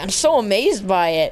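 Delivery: ordinary delivery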